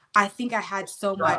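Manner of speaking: ordinary talk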